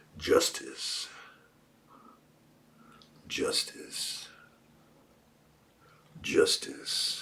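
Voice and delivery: breathy, whispered put-on cowboy voice. Naming a word that gets thrown around, in a put-on cowboy voice. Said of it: "I'll do it in my best cowboy voice".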